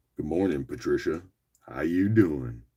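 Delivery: voice dropped way down to its deepest.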